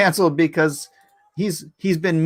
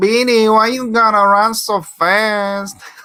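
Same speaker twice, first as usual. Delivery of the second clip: slow, loud, drawling cartoon mouse voice; 4 semitones higher, 5 dB louder than usual. Recalling Speedy's little cousin with the giant nose: imitating the big-nosed cousin mouse. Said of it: "he talked like this".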